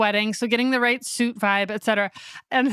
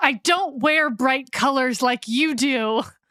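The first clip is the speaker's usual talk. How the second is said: raised, stressed exclaiming under strain, not mean; 2 semitones higher than usual. Retelling how a man exclaimed at the speaker in a moment of duress, imitating a raised voice. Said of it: "in a raised voice".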